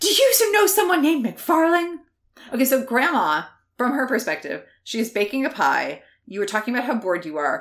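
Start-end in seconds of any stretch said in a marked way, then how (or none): 0.0-2.0 very high, winded, breathless gasp. Narrating the scene, the player character rushes to Grandma, gasping, out of breath. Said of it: "you gasp, almost out of breath".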